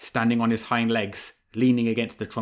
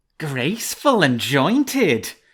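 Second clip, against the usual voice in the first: high, swooping, cat-like purring hiss; 5 semitones higher, 5 dB louder than usual. The narrator voices the fox mocking the cat, hissing, imitating a cat's purr. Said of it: "hissed the fox, imitating the cat's purring".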